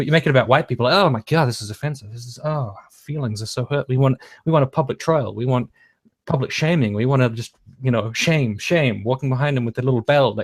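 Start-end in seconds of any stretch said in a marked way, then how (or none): none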